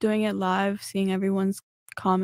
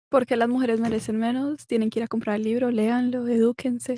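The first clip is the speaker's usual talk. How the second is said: natural Colombian Spanish accent. Asked to say the book title in Spanish, Colombian accent. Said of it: "She has like this Colombian accent".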